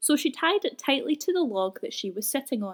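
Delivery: ordinary delivery, nothing marked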